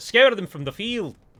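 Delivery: patchy Scottish accent. Quoting a line he likes the sound of, hit-and-miss scottish accent. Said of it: "My Scottish is very hit and miss".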